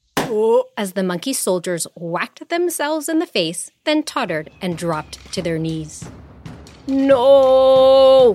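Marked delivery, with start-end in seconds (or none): 6.9-8.4 long, very loud, drawn-out wailing howl. Narrator reads the king as his monkey soldiers fall, howling. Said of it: "howled the king".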